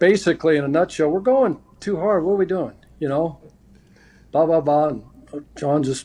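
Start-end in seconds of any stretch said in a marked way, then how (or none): none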